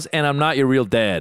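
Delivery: ordinary talk, nothing marked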